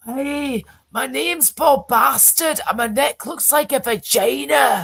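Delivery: put-on high-pitched Scottish accent. Speaker recalls a favorite Austin Powers character, doing a Fat Bastard Scottish voice. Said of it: "he's like that".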